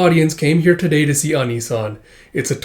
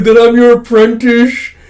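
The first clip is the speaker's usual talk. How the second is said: mock overjoyed, high, loud, welling up with tears; 8 semitones higher, 6 dB louder than usual. Retelling a drunk apprentice's line to the master: imitating someone tearing up.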